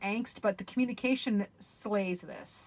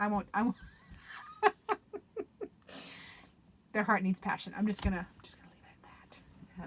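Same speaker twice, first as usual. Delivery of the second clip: giggling, laughing through the words. Reading a card about what a heart needs, giggling while talking. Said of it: "I'll stop giggling like a schoolgirl".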